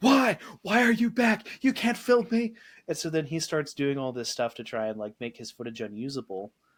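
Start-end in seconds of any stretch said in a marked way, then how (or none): 0.0-2.5 very high, shrill shrieking outburst. Retelling a sitcom scene where a character confronts the film crew: imitating someone screaming. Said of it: "he just starts screaming".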